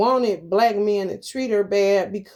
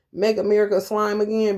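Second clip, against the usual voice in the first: plain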